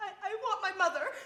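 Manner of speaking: loud, tearful voice, crying through the words. Telling another speaker they want their mother, crying. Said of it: "what are you crying for?".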